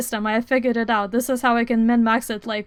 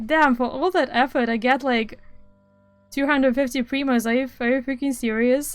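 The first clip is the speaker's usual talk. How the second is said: usual speaking voice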